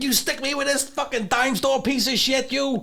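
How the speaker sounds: high-pitched tough gangster rant. Showing off one of only four impressions you can do, do a Joe Pesci impression. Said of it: "And that's Joe Pesci".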